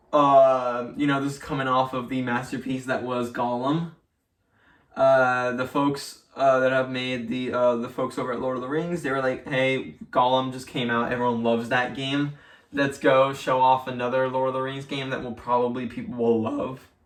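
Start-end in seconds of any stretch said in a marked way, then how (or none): none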